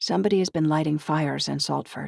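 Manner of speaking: ordinary delivery, nothing marked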